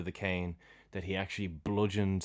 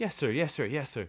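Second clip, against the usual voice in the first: hammy, scared voice, all nerves; 6 semitones higher than usual. Retelling Twiddle replying to the colonel: hammy Twiddle voice. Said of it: "he's just hamming it up so much".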